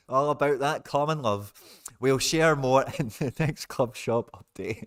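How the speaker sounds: laughing through the words, slowing down. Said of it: "I'm just laughing at common love".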